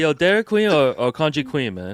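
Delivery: casual put-on accent. Retelling running into the cafe worker on the street, imitating [name] with an accent. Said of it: "That's actually pretty good, [name]".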